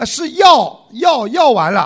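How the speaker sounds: 药 hit high and loud. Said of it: "你喊得不对呀".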